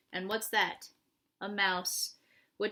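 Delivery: ordinary delivery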